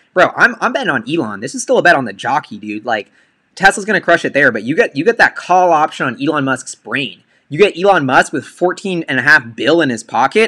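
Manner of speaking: ordinary delivery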